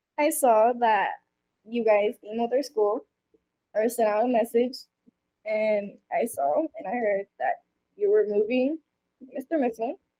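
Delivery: choked-up voice catching with emotion. Telling someone they heard he is moving away: getting emotional. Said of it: "Sorry for getting emotional".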